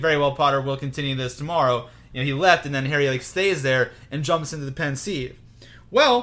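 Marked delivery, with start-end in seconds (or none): none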